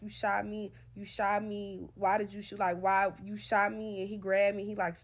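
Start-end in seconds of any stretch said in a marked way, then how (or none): 0.0-4.0 acted, repeated, slow, drawn-out pleading hollering. Retelling what was shouted after being shot: imitating own hollering. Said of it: "I'm hollering".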